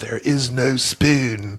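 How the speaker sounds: very slow, every word dragged out. Quoting a line from The Matrix: Keanu Reeves impression. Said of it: "right phrase, wrong accent".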